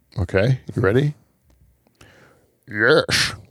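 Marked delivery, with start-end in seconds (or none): 2.6-3.3 put-on Scottish accent. Answering whether Sean Connery likes pizza: Sean Connery voice. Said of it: "impression of Sean Connery".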